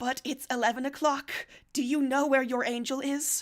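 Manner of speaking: loud, despairing lament heavy with despair. Voicing the other you in the scene: speaking with despair. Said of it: "She begins with despair".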